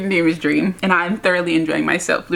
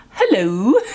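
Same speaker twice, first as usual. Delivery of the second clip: put-on stiff, very formal polite voice; 3 semitones higher, 3 dB louder than usual. Retelling a character greeting someone in a show: imitating a formal greeting. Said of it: "Like, all formal".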